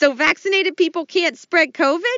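shrill, very high-pitched, puzzled sidekick voice. Playing the Costello part in a parody sketch: Lou Costello voice. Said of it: "playing the part of Lou Costello will be [name]".

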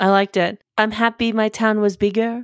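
attempted, put-on European accent. Doing the other speaker's accent while talking about a town: put-on European accent. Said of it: "I'm trying to do your accent now".

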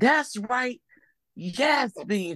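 put-on high, drawn-out drunken woman's yell. Speaker recalls a drunk woman in a movie theater, imitating her yelling. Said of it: "she was drunk and kept yelling".

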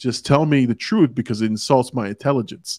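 ordinary talk, nothing marked

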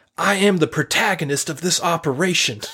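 put-on, very indignant, affronted delivery. Quoting a favorite movie line said by the main character: imitating an indignant line. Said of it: "very indignantly says".

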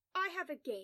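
ordinary talk

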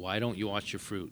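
mock-accusing tone. Speaker describes someone confronting a new customer they don't know, mock-accusing tone. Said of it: "in that tone be like".

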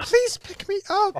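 put-on very high, terrified, horrified little girl voice. Acting out the girl from the story: imitating a scared little girl. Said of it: "Like the horror in that little girl's voice".

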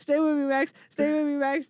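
tearful sobbing voice. Retelling a scene where a character holds a friend: imitating Lucas crying. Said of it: "he's, like, crying".

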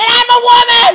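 shrill, very loud screaming. Retelling a confrontation in the women's room: retelling a scream. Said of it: "And I screamed at her".

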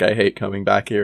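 ordinary delivery

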